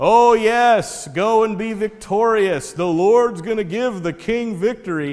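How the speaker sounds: mock sneering sarcasm. Retelling a Bible story, the prophet answering the king, imitating sarcasm. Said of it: "and with sarcasm".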